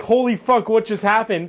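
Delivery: plain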